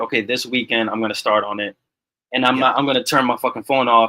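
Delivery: ordinary talk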